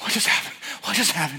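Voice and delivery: put-on gasping, stunned child voice. Retelling a little girl just lifted from a wave: imitating a gasping, stunned child.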